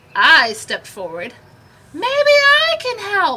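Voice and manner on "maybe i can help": very high, loud calling shout. In a storm, the narrator steps forward to the pirates: shouting over the wind. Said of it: "I shouted over the wind".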